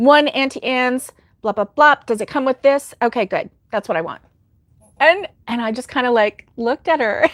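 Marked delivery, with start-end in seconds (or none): 0.0-4.2 bossy, commanding, authoritarian, demanding tone. Retelling a friend ordering a pretzel at a mall: imitating an authoritarian order. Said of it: "very authoritarian the way she said it".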